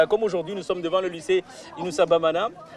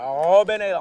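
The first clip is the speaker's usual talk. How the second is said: American accent and pronunciation. Quizzing a student on where Robben Island is, saying it with American accent. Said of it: "avec l'accent. Ça, c'est l'accent américain, ça".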